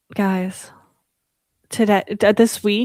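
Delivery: soft asmr-style whisper. Starting to tell the group about something from work: ASMR voice. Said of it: "why are you doing A S M R?".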